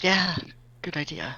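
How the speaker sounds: hushed half-whisper. Voicing a character who leans over and half-whispers agreement: half-whispering in character. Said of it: "She's gonna lean over and whisper back".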